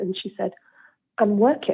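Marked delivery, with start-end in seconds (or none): 1.2-1.7 put-on disgusted tone. Retelling another mum's reply at the school gates: imitating a disgusted mum. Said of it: "she just looked at me in disgust".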